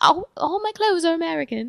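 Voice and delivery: horrible, high-pitched, bad English accent.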